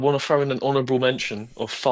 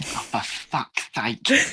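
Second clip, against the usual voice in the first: very slow, very drawn-out voice. Imagining Mum hearing the podcast: imitating Mum. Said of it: "she hears my voice and she goes".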